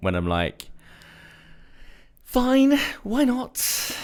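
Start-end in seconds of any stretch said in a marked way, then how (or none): 2.3-4.0 very high, stressed-out voice. Retelling own answer to a question: imitating own high stressed voice. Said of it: "the voice thing only really happens".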